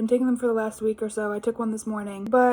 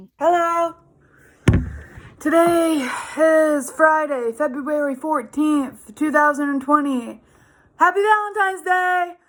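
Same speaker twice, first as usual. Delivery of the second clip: high-pitched shout at full voice; 5 semitones higher, 4 dB louder than usual. Speaker greeting on Valentine's Day, shouting. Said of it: "I'm sorry for shouting".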